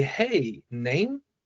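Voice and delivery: name rising slightly at the end. Calling someone by name instead of asking a question, slight upward inflection on name. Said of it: "with that slight like upward inflection".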